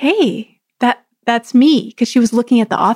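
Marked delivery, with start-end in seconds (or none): 0.0-1.9 mock whispered voice. Retelling speaking to a woman looking at the author page: imitating a whisper. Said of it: "So I just sort of whispered to her".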